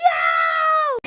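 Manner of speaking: high-pitched, amazed crowd-like shout.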